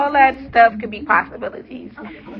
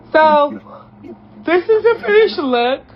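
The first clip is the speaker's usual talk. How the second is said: speaking mid-yawn, pitched up; 6 semitones higher than usual. Showing viewers the finished braids, yawning while talking. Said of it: "I'm yawning".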